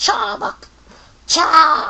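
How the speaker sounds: squealed out in a cartoon snake voice. Describing the show's Team Rocket losing, imitating Arbok's cry. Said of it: "he's like".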